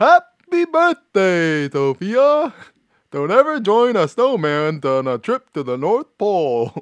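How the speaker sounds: very high, loud, swooping cartoon voice. Wishing Sophia a happy birthday, doing the Frosty voice. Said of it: "I'll do my Frosty voice".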